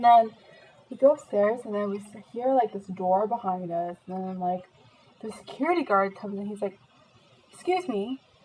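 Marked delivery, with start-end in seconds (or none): 7.5-8.2 put-on English accent, higher and quieter. Retelling what a security guard said on finding them upstairs: imitating a security guard in english accent. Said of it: "pretend I'm talking in English accent".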